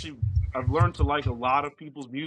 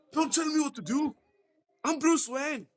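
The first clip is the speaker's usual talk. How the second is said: very high, fake put-on Scottish accent; 13 semitones higher than usual. Acting out an exchange about playing Batman, in a put-on Scottish accent. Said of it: "why he became Scottish all of a sudden".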